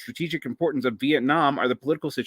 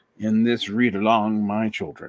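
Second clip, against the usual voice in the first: put-on old-time pulpit preacher voice; 3 semitones lower than usual. Opening a book read-along for listeners, in an old preacher's voice. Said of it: "part of me has to go into the old preacher's voice".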